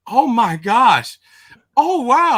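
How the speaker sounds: very loud, very slow, very high exclamations. Retelling own loud reactions while pulling cards: imitating own loud exclaiming. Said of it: "I didn't know I was that loud".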